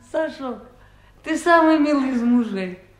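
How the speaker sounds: tearfully touched, close to crying. Her husband Sasha serves her supper, and she answers: touched, near tears. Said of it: "Я сейчас заплачу, честное слово".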